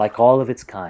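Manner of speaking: ordinary delivery, nothing marked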